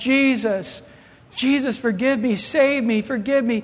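frantic, desperate pleading cry, somewhat mild. Retelling a plane crash passenger's cries: imitating someone screaming. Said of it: "screaming at the top of his lungs".

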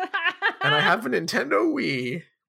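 put-on high-pitched old guy voice. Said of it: "doing, like, an old guy voice for him".

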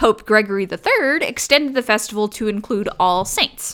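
ordinary delivery

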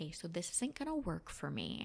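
softly spoken. Retelling what they said to the teacher after calling her over, very quietly. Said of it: "I just called her over very quietly".

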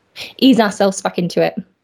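ordinary delivery

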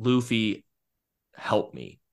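tearful, begging voice. Retelling a scene where a character asks for help amid tears: imitating a tearful plea. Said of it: "amid tears, finally asks for Luffy's help".

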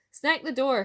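crying out loudly and high. The shepherd, as a wee bannock comes in to his fire, crying out. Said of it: "cried the shepherd".

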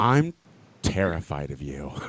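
put-on dead serious tone. Retelling what a baby queen said after a compliment: imitating someone dead serious. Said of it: "serious as hell".

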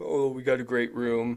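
put-on deep giant's voice. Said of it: "the same voice as that Andre the Giant voice".

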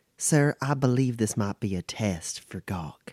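hushed voice. Player's character leans in so gawk cannot overhear: hushed tones. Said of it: "in hushed tones as if to not let gawk hear".

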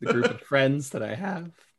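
cracking voice. Finishing a story about running to the stable: voice cracking. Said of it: "The voice crack for me".

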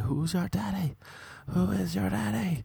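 put-on very high, grating, rough yell. Retelling how the teacher shouted at someone in class: imitating a teacher shouting. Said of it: "he started shouting at someone".

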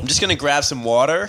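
attempted put-on American accent. Asked to do their best American accent, speaking in an American accent. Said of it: "do your best American accent".

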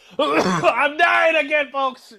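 loud, high, slowed, cough-wrecked groan.

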